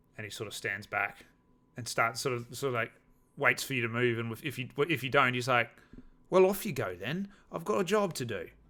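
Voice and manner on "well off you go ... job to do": bad, dodgy put-on Cockney accent, pitched up. Retelling what a man said after giving directions, in a dodgy Cockney accent. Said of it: "suddenly he's got a dodgy Cockney accent".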